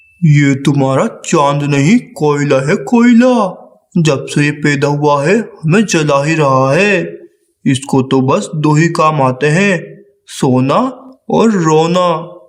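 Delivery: very low, cross, fatherly cartoon crow scolding. Narrator of a cartoon voicing the father crow answering the mother crow. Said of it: "फिर [name] कौवा [name] को लेकर school के लिए निकल जाता है और [name] कौवे को स्कूल छोड़कर काम के लिए चला / फिर [name] कौवा [name] को लेकर स्कूल के लिए निकल जाता है और [name] कौवे को स्कूल छोड़कर काम के".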